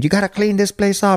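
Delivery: mimicked loud scream. Retelling how the father screamed every morning about cleaning up. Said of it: "my father screaming".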